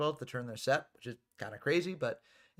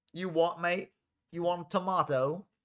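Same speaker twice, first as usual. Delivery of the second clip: slow, botched, butchered British accent; 4 semitones higher, 3 dB louder than usual. Reacting to a viewer comment, doing a butchered British accent. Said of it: "I butchered the accents for".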